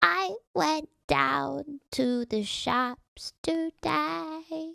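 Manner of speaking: weird, quirky, high drawl, very slow. Demonstrating a common type of women's voice: high-pitched, weird, quirky voice. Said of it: "a really high pitched, weird, quirky one".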